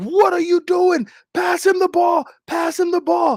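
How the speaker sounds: put-on urgent, high, frantic screaming. Recounting a basketball play, the speaker acts out a player on the block, retelling a scream.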